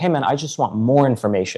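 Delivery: friendly, polite, nice and soft-spoken voice. Showing how a guy could have asked for more information, imitating a nice tone. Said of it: "if this guy would have said it nicely".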